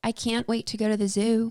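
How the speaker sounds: straight, everyday American accent. Taking turns with a practice sentence, speaker says it in an american accent. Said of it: "You doing American accent?".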